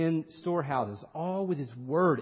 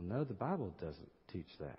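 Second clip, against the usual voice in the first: low, soft mutter under the breath; 10 semitones lower, 13 dB quieter than usual. Retelling a son's reply to his teacher: imitating muttering under breath. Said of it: "under his breath".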